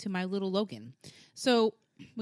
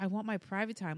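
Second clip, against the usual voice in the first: put-on scared voice, quieter; 2 semitones lower, 6 dB quieter than usual. Retelling what he said when she finally went up to him, imitating him sounding scared. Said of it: "he looks so scared".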